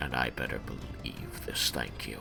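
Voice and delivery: dropped to a very low, quiet hush. Voicing a character who addresses the group, in a lowered voice. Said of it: "he lowers his voice and says".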